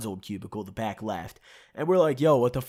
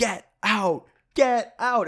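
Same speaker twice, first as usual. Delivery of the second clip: mock very slow, dragged out, high, furious yelling; 9 semitones higher, 4 dB louder than usual. Telling a story, acting out a man who kept yelling at them: retelling a furious yell. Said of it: "he yells".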